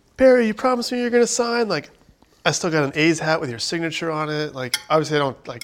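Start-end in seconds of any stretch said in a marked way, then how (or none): 0.2-1.7 put-on, very high, shrill yell. Reminding barry how she begged him to sign at spring training, retelling a yell. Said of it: "I was yelling at you".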